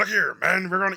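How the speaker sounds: loud, gruff general voice. Describing how an actor talked in a favorite movie: gruff George C. Scott impression. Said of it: "real gruff".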